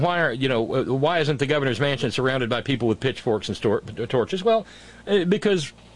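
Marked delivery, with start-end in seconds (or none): none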